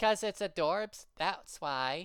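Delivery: put-on high, loud small girl's voice. Speaker voicing both sides of a dialogue without Tara: little girl voice. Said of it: "I can't do little girl voices".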